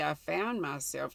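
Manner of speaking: plain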